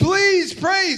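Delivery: high, begging, imploring, pleading voice. Telling a story about asking their dad to pray, the speaker is retelling begging. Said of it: "begging my dad".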